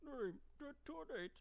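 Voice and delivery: soft, high, robotic text-to-speech computer voice. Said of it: "That's my attempt at a, the Bonzi Buzzy voice".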